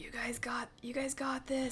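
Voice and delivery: softly spoken. Role-playing a character who hides again, encouraging the others: said quietly. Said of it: "I quietly just say".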